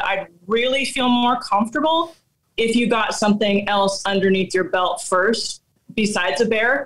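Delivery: plain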